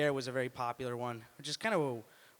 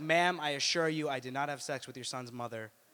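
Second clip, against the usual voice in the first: usual speaking voice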